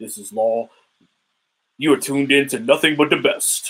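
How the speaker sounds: smooth, velvety voice. Imitating a YouTuber's channel intro: Law Nation voice, velvety.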